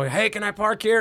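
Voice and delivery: high, put-on yell. Telling a story about a man who pulls up; retelling a yell.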